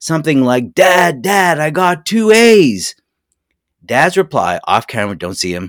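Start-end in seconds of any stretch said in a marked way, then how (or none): 0.7-2.9 mock very high, loud, thrilled child's yell. Describing a film scene where a kid rushes in calling his dad: retelling an excited scream. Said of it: "he screams excitedly".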